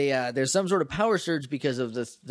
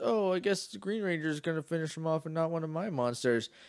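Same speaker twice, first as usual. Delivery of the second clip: put-on sad voice, much quieter; 3 semitones higher, 5 dB quieter than usual. Recapping a scene from the show, imitating Finster's sad voice. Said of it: "then he gets sad all of a sudden".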